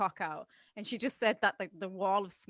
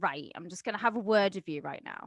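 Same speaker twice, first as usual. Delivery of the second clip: mock kind yet firm motherly tone. Imitating a mum sitting her child down: imitating a mum's nice but firm scolding. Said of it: "when your mum sits you down and she's like".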